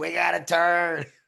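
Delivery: play-acted ragged, raspy, high, rough scream. Retelling a scream at the end of a video: imitating own scream. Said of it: "I screamed".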